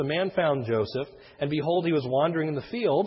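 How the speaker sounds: normal talking voice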